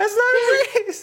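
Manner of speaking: high, laughing protest, breaking into laughter.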